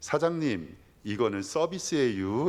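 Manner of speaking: polite tone with Chungcheong accent. Imitating a Chungcheong diner finding hair in food, Chungcheong accent. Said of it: "제가 흉내 내볼 테니까".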